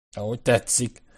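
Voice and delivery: plain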